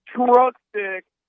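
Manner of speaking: piercing, shrill, very high yell. Retelling what a man yelled as he plowed through people: imitating someone yelling. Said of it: "and then he just yells".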